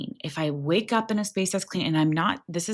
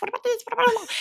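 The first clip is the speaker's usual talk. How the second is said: mimicked taunting bird voice, higher. Retelling a small bird taunting a hawk in its face: imitating a taunting bird. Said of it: "was mocking this".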